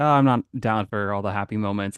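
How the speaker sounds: ordinary talk, nothing marked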